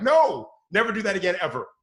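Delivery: frantic, high, loud, swooping hysterical shouting. Showing parents how to react when a child nears the road, hysterical. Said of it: "really kind of be hysterical".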